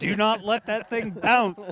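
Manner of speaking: mock yelling, high and loud.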